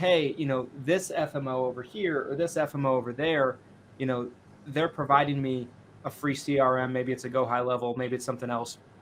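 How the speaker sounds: usual speaking voice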